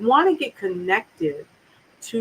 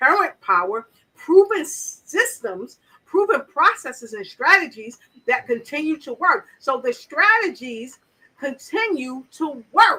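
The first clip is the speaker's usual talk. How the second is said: loud, excited voice, much higher; 6 semitones higher, 4 dB louder than usual. Speaker talking about a motivational speaker's strategies, in a loud, excited voice. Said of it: "And my voice getting loud".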